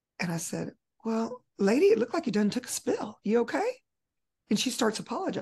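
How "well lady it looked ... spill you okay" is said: playful, lighthearted teasing with joking concern. Speaker retelling what they said to an embarrassed woman, lighthearted teasing. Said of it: "I wanted to make it lighthearted".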